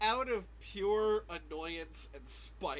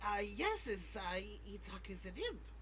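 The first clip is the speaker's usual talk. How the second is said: slow, drawn-out little imp creature voice; 6 dB quieter than usual. Speaker as the imp answers being asked if it's an imp, in Itak the imp's voice. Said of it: "Say that without the voice".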